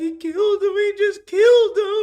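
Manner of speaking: put-on very high, loud, weeping, sobbing wail. Retelling a scene where a man weeps, imitating someone sobbing. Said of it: "He's sobbing".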